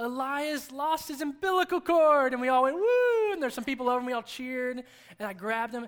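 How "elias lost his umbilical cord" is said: very slow, proud, high, drawn-out tone. Recalling how she came in holding the baby up, imitating her proud announcement. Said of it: "she was all proud".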